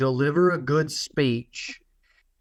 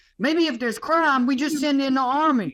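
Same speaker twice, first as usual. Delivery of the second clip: put-on very high, childish twelve-year-old voice; 12 semitones higher than usual. Mocking a naive opinion by acting it out: imitating a twelve-year-old. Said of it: "you're twelve".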